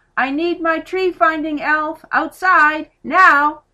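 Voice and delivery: very loud, drawn-out, high-pitched shout. Dad shouts into the living room, calling Molly outside: shouted. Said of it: "He shouted into the living room".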